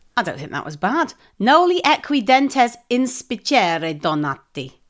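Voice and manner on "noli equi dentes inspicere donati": Latin words pronounced in an Italian style. Reading a Latin phrase aloud: Italian-sounding pronunciation. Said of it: "I'm saying it like that, like it's Italian".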